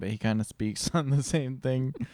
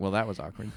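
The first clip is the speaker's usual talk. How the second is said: imitated muttering under breath; 3 semitones lower than usual. Retelling how an awkward phone call ended: imitating a mutter under breath. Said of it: "mutter that under her breath as she hung up".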